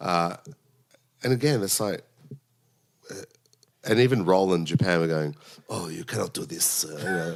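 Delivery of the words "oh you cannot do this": put-on vague, French-ish accent. Retelling what Roland Japan said about the idea: imitating Roland Japan in French-like accent. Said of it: "what was that accent?".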